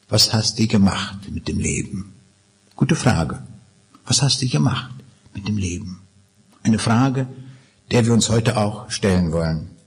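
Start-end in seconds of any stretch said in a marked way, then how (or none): 0.1-2.1 put-on Berlin dialect. Speaker imagining being asked face to face at life's end, in Berlin dialect. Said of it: "so auf Berlinerisch".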